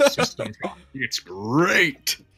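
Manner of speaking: put-on cartoon tiger mascot voice. Trying the Tiger line after another attempt: Tony the Tiger voice. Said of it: "in the Tony the Tiger voice".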